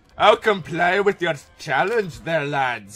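very bad put-on Scottish accent. Accepting a challenge while playing, in a bad put-on Scottish accent. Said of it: "Worst Scottish accent ever".

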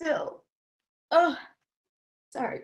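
voice breaking through tears. Telling a personal story, choking up while telling it. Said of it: "I can't even tell that story without crying".

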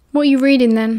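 ordinary delivery, nothing marked

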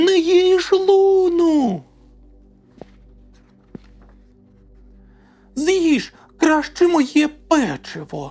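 very high, loud yell, one word stretched. Narrator reading Logan's line as he rushes off to save his friend, shouting. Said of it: "кричав Логан".

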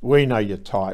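sneering. The sergeant confronts the narrator, sneering. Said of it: "the sergeant sneered".

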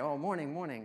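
friendly, happy, very cheerful. Retelling meeting two men on a walk: imitating own cheerful greeting. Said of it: "I very cheerfully say".

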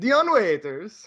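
put-on heavy Italian accent. Retelling a passerby on a scooter calling out: extremely Italian accent. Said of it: "in an extremely Italian accent says".

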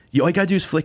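play-acted half-angry tone. Telling a story about a shoot, reenacting grabbing the dog's leash: retelling speaking angrily. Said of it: "like kind of angrily".

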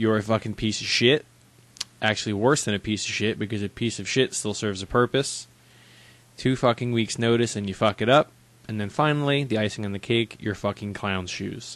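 ordinary talk

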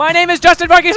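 shouting. Commentating a match and greeting his dad, yelling. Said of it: "I am yelling!".

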